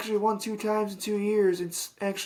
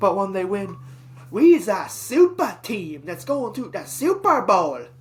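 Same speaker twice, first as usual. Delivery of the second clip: bad, loud, sing-song mock boastful caricature voice; 6 dB louder than usual. Complaining about sports fans, mimicking them after a win: bad sports-fan impersonation. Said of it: "that was a really bad impersonation of some random fan base".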